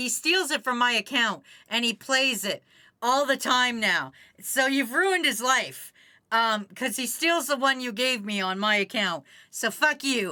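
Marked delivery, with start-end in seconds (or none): none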